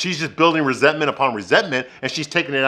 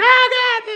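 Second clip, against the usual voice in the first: very high, startled, pained scream; 3 dB louder than usual. Telling how a man rolled over and knocked Carrie off the bed, imitating Carrie screaming. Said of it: "And she starts screaming".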